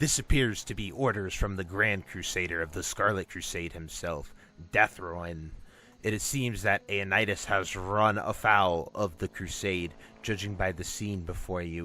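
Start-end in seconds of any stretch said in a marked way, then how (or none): none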